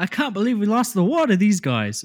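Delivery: clumsy put-on British accent, very high, shrill, swooping. Imitating British people watching American TikToks, in a bad British accent. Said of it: "I can't do a British accent".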